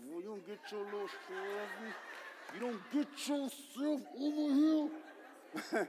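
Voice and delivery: words pushed through gritted teeth. Acting out what parents say to their child, talking through the teeth. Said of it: "talking through our teeth".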